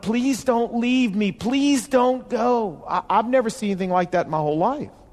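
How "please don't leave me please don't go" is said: desperate, high, drawn-out pleading wail. Retelling a man at the speaker's grandmother's casket: retelling a screamed plea. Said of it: "he was screaming my grandmother's name and begging her".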